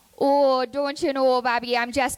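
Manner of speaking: put-on Minnesotan accent. Going through a list of accents, the speaker does a Minnesotan accent.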